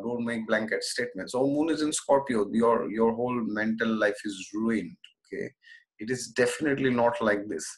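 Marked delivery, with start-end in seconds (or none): none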